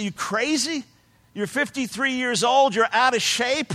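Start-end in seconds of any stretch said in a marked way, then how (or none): none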